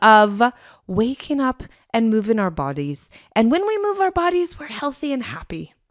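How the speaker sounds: put-on posh lady's British Irish accent. Co-host laying out the family schedule, in a posh british irish lady accent. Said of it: "It was a very posh British Irish lady".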